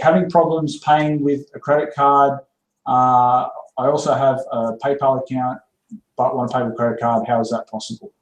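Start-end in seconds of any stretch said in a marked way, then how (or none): none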